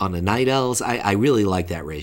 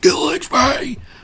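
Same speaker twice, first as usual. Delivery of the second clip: shrill, high, loud, forceful shout; 6 dB louder than usual. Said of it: "the guy from three hundred be shouting it, like".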